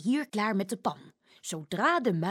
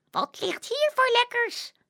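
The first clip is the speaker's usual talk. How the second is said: very high, little piping squeaky mouse voice; 14 semitones higher, 4 dB louder than usual. A narrator reads a boy pretending to be a mouse, in a squeaky mouse voice. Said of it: "Zegt hij met een piepstemmetje".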